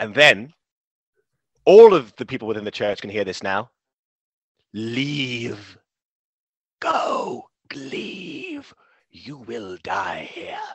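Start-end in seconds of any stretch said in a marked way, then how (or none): 4.7-10.6 slow, eerie, ghostly drawn-out whisper. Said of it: "And the whispering is".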